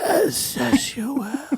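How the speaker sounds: very high, breathless, out-of-breath smoker voice. Prompted by another speaker to try the line, out-of-breath smoker voice. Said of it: "do it like as if you're a smoker and you're out of breath".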